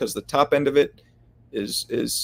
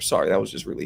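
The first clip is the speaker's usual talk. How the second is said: normal talking voice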